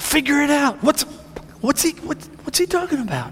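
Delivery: puzzled, high-pitched tone.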